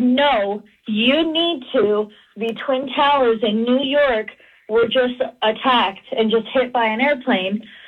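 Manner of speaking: usual speaking voice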